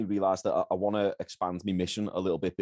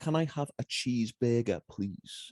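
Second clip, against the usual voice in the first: slowed, toned-down accent, pitched up; 5 semitones higher than usual. Showing how to order at an American McDonald's: slowed-down, toned-down accent. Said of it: "You've gotta slow it down".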